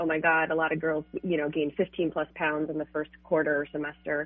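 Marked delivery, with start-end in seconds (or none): none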